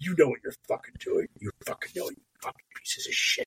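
angry, stern, scolding whisper. Imagining glaring at grifters through an avatar, the speaker goes mock-angry, stern. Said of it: "glaring at them like angrily, sternly".

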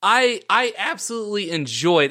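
voice cracking on hard, heavy emphasis. Wrapping up the episode and thanking the guests, voice cracking for emphasis. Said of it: "and my voice cracked for emphasis".

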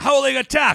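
loud high-pitched shout.

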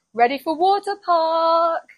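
put-on very high yell with very strong Greek accent. Retelling the boat captain yelling out, in a very strong greek accent. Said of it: "in a very strong Greek accent".

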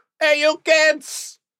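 very high-pitched Brooklyn accent, man's voice. Imagining himself as a Brooklyn guy in Hawkins, Indiana, calling to kids in a Brooklyn accent.

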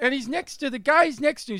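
put-on very high, loud, baffled, perplexed New York accent. Describing a dad in the front seat talking to his kid in the back, imitating a perplexed old New York dad. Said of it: "he's some old New York dad".

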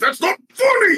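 loud, very high-pitched, fed-up, frustrated grunting. Narrating a big beefy arm after a knock-knock joke, frustrated grunt. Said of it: "It grunts in frustration and says".

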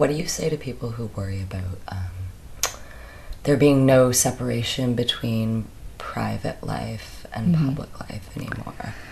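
very low, octave-dropped, soft, musing voice. An interviewer asks a guest a question while thinking it through, voice dropped lower. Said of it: "your voice went lower an octave".

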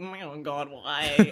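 very slow, dragged-out moth character voice. Retelling how the thing that split in half reacted, in a moth impression. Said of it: "I really like your moth impression".

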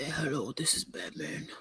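breathy, whispered, sleepy not-yet-awake morning voice. Imitating the other speaker answering a morning call: Batman morning voice. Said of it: "I sound like Batman in the morning".

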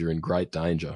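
normal talking voice

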